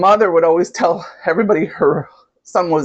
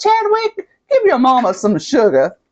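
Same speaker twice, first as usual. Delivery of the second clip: thick put-on Southern accent, high and swooping; 7 semitones higher than usual. Quoting a movie mother's favorite line to her son: imitating a strong southern accent. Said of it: "she has a strong Southern accent".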